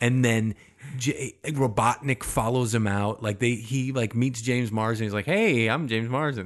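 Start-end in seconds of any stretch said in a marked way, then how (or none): 5.2-6.5 easygoing, relaxed natural speaking voice. Imagining a Sonic movie scene, a character meets James Marsden: James Marsden impression. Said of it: "And that's what he talks like?".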